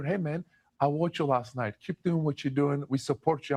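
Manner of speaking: acted-out, imitated whisper. Player retelling an assistant coach's words on the court, imitating a whisper. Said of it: "came up to me and whispered in my ear".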